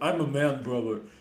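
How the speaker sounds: put-on deep male voice, Russian accent. Retelling how a man dropped his female posing voice, deep Russian male accent. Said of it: "switched to a deep Russian male accent".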